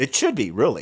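tongue-in-cheek, sarcastic aside. Commenting on a Democrat justice's dissenting vote: sarcastic. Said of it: "I said that sarcastically".

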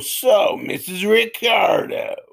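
high-pitched, rough character voice. Recalling a sitcom character actor's line: Frank Nelson impression. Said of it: "the guy who would go".

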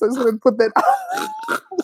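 very high, crying laugh, squealing through laughter.

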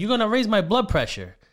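full-on high, loud yell. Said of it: "yelling at her".

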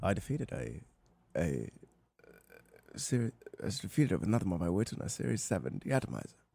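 very low, very soft, quiet voice. Trying again on the same line: Liam Neeson voice. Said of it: "let me go for Liam Neeson".

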